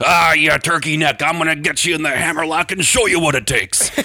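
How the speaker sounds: high, fake yell. Retelling Dad scolding a naughty little kid: fake-yelling in Crusher Lisowski voice. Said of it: "fake yell at me in the Crusher Lisowski voice".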